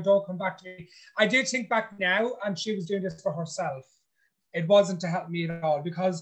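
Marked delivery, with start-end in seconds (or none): none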